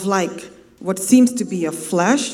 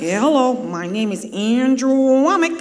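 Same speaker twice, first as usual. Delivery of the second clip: put-on, laid-on southern American twang; 4 semitones higher than usual. Recalling a teacher whose voice you could not stand, mimic Andrew Wommack's southern twang. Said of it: "he had a southern twang".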